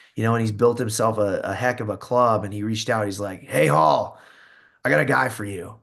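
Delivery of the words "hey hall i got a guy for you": put-on gruff voice. Recalling a man he knew growing up reaching out, imitating a gruff voice. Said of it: "He's got a gruffy voice".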